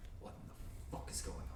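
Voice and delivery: hushed, soft, rushed whisper.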